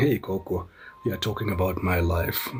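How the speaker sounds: normal talking voice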